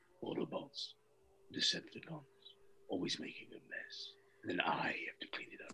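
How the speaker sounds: very quiet, barely voiced, near-whispered. Recalling recording dialogue on cue, the speaker retells a quiet line. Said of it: "Literally as quiet as that".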